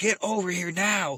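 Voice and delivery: put-on yelling. Retelling how he yelled over the radio, banging the desk: imitating someone yelling. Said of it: "when he was yelling for me".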